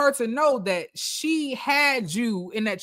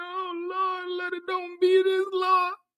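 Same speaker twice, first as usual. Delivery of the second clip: pitched-up, put-on sobbing, fake crying; 7 semitones higher than usual. Retelling a phone call where the caller pretends to cry: imitating someone fake crying. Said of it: "he's acting like he's crying".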